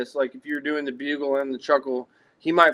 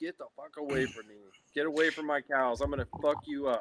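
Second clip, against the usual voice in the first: put-on furious bull elk voice, short and snappy; 9 dB quieter than usual. Voicing a pissed-off bull elk chasing off a rival: imitating an angry bull elk. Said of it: "He's getting excited".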